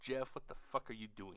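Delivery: put-on annoyed scolding voice. Voicing Jasmine, who looks pissed, scolding the speaker: voicing Jasmine getting pissed. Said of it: "she's looking at me like she's getting pissed".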